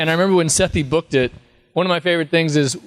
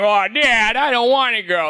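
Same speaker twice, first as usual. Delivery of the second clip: very bad cartoon voice, high, slow, drawn out; 6 semitones higher than usual. Showing how the son's voice turned out: very bad Chris Griffin voice. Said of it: "I do a very bad Chris Griffin".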